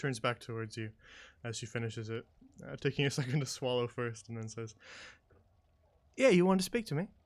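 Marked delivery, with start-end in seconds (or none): 6.2-7.1 female orc creature voice. A storyteller voices an orcish woman who finishes her drink and turns to speak, orcish woman voice. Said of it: "the orcish woman uh".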